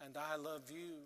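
put-on fading voice. Recalling a dying man answering the family's words, retelling a fading voice. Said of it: "he said in a fading voice".

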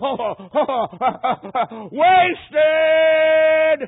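very loud, desperate, anguished scream. Retelling a dying man crying out toward heaven: imitating a scream. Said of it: "he just screamed out".

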